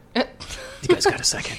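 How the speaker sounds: whispered voice. Retelling how people pulled them aside after a tour: imitating a whisper. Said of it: "whispering, like".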